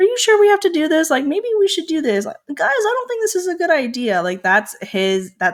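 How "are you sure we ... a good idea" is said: put-on very high, timid, fast nervous babble. Imitating how Grover talks in the book: imitating a timid, nervous Grover. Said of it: "He's very timid".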